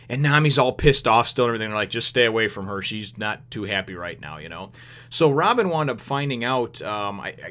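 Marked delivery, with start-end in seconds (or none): none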